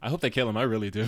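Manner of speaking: usual speaking voice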